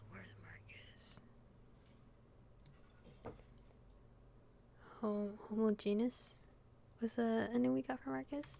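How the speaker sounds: low, downcast voice. Reacting to the ending a game gave Marcus, sounding really down. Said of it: "Sorry if I sound really down".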